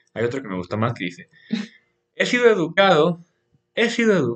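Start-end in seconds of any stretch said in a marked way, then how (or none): 2.1-4.3 put-on Argentine Spanish accent, higher pitch. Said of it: "y ya iba a decir argentino".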